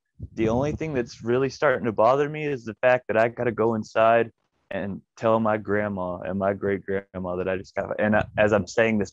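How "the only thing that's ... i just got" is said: ordinary delivery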